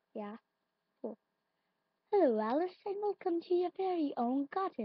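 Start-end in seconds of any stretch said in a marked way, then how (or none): 2.1-4.8 put-on lady voice, pitched up. Playing a garden game, voicing the character who welcomes Alice: put-on lady voice. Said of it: "That's my voice for that, lady".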